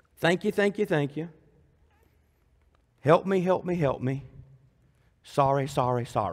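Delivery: impersonal, mechanical praying by rote. Imitating how people pray, mocking impersonal rote prayer. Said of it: "Listen to people pray".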